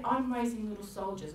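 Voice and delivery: normal talking voice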